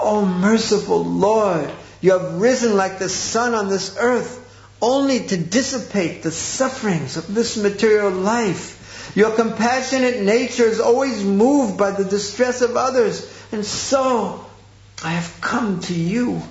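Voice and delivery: wailing, pleading voice.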